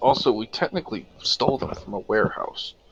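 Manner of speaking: whispering. Saying an aside to one other player at the table: whispering. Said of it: "I'm gonna whisper to Tess".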